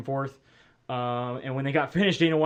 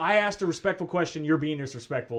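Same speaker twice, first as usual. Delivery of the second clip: normal talking voice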